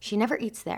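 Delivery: ordinary delivery, nothing marked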